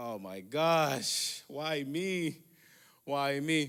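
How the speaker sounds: frightened voice with very slow, drawn-out words. Retelling being told to leave the car: imitating own scared reaction. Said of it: "'cause I was just scared".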